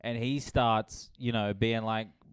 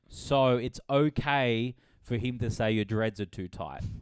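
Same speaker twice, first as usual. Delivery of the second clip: plain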